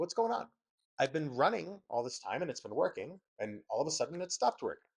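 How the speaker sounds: plain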